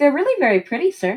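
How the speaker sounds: soothing reassuring tone. Role-played character studying Alvaron's eyes: most reassuring voice. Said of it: "in her most reassuring voice".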